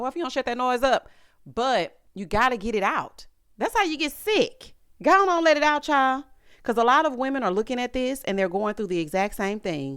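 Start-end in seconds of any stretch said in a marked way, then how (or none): 0.0-1.1 put-on scolding tone. Retelling what she says when her son overdoes it: imitating scolding her son. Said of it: "I'll be like".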